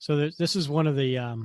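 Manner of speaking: ordinary talk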